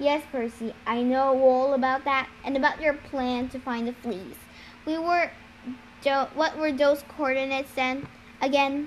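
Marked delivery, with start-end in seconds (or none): none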